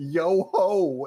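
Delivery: sudden, full-throated, loud, high-pitched yell. Recounting how someone called them on the phone, retelling a yell. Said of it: "Chaz called me and just yelled".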